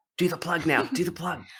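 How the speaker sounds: hushed stage whisper, spoken aside. Speaker prompts Ally to do her plug: stage whisper. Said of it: "[In a stage whisper]".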